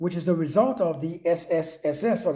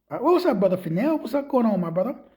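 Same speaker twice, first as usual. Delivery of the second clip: normal talking voice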